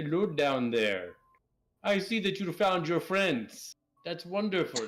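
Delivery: calling out, projected downward. The dwarven vampire pokes his head down a 100-foot drop and yells down to you. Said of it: "he yells down to you".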